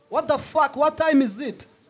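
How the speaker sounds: high yelling. Asking the other speaker what time it is: yelling. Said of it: "I'm yelling".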